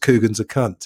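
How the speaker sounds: ordinary talk, nothing marked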